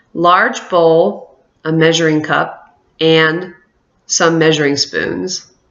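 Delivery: measured pace, clear pause at each comma. Reading answer choice a aloud as a list, pause at each comma. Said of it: "I pause for the commas, here's what it sounds like".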